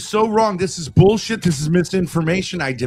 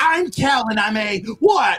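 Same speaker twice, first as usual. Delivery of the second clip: mocking put-on voice, higher-pitched; 4 semitones higher than usual. Acting out Kel speaking at an alcoholics' meeting: mocking imitation of Kel. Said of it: "you go to the alcoholic meeting and you go".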